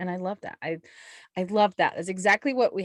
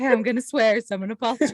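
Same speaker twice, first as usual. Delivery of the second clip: put-on apologetic voice, higher and louder; 3 semitones higher, 5 dB louder than usual. Imitating Delancey, who apologizes before she swears: imitating Delancey apologizing. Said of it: "She does before she does it".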